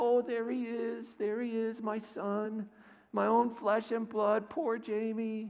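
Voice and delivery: mocking, high, slow crybaby whimper and sob. Retelling a drunk father taunting his son after a loss: imitating mocking fake crying. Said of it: "he's mocking him, pretending to cry and teasing him".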